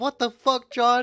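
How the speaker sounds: put-on British accent. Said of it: "you hear her accent".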